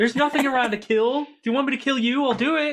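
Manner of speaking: very high, mouthy, sassy skeleton voice. Voicing a summoned skeleton annoyed at being called: sassy skeleton voice. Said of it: "these skeletons are giving us Jeff sass".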